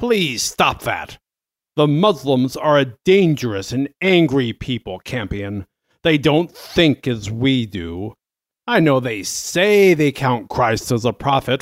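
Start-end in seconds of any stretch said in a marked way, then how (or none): none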